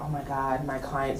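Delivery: soft, low, hushed gasp of shock.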